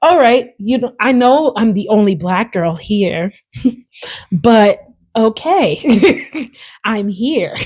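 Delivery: mock buttoned-up, slow, corporate-professional voice.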